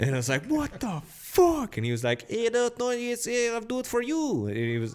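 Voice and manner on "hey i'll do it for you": put-on very high, drawn-out, slow Italian accent. Retelling what a man offered to do for the speaker, in a put-on Italian accent. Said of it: "I don't know why he had an Italian accent".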